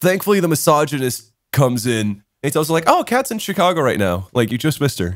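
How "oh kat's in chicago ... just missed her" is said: mock super casual, offhand, swooping tossed-off delivery. Retelling what a friend said, imitating someone speaking super casually. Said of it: "super casually".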